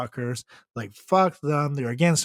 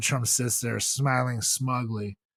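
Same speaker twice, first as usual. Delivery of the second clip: plain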